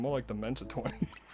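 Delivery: put-on muttered aside. Retelling a friend's joke during a game session: imitating a mutter under the breath. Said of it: "under his breath".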